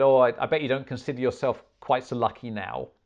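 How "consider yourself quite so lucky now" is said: normal talking voice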